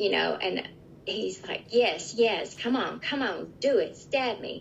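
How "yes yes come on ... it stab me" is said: play-acted, bold, daring, urging tone. Retelling an attack, imitating the attacker yelling: imitating Steve yelling. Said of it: "with Steve yelling".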